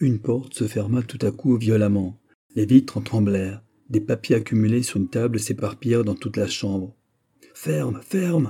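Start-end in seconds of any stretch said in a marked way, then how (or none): 7.5-8.5 high, terrified cry. An old man in bed, just after a door slams shut: cried out in terror. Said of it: "cria le vieillard, saisi de terreur".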